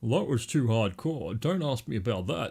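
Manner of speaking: voice dropped low. A narrator reads a man's answer to a woman asking about his tattoo, comically lowered voice. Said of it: "she lowers her voice comically".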